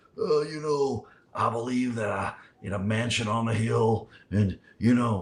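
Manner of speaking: put-on slow, hesitant, smoky, drawn-out New Jersey accent. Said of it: "you gotta do the real [name] impression".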